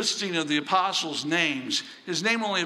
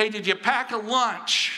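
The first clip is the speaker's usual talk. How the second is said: play-acted mom voice, calling out and hollering; 4 semitones higher than usual. Retelling a mother calling to her son heading out the door: imitating a mom hollering. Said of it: "his mom's hollering at him".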